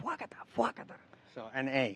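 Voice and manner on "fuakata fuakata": put-on hushed, breathy, whispered old-grandma voice. Explaining a word to others by acting out a grandma with a sandal, imitating an old grandma. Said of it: "Like an old grandma, like, grabbing a sandal saying".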